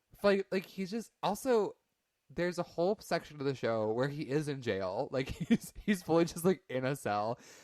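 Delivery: normal talking voice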